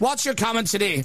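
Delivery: mock Northern Irish accent, radio shock jock style.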